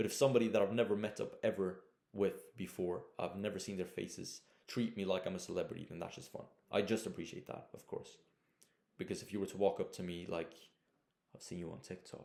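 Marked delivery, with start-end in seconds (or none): 11.3-12.3 hushed, very quiet, utterly calm, almost whispered. Imitating a stranger calmly recognizing them from TikTok, mock super-calm fan. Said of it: "like being super calm".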